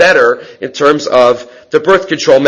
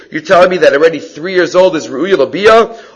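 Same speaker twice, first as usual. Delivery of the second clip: ordinary talk, nothing marked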